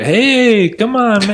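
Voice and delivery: high-pitched, slow, drawled male voice.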